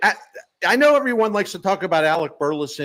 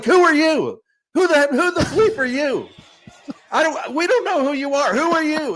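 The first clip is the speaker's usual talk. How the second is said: shrill, high-pitched screaming; 10 semitones higher than usual. Retelling how Shildt yelled at the kid from the top step, imitating his screaming. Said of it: "He's like screaming at the kid".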